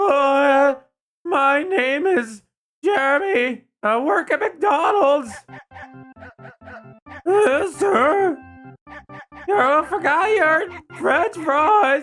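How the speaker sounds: intentionally cracking voice. Showing voice cracks on command as a fast-food worker: cracking voice on purpose. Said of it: "I can do voice cracks on command".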